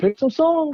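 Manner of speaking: high-pitched, all fired up, urging tone. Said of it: "He was all fired up".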